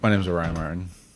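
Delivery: mumbled, words slurred and smushed together. Saying the name when asked to introduce oneself: mumbled, words smushed together. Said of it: "It's a little bit kind of all glommed together".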